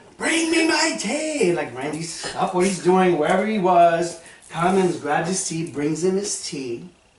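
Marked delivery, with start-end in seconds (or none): 0.2-1.5 shrill, very high, drawn-out scream. Retelling how a man in the door frame screamed for Randy, retelling a scream. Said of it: "he's screaming".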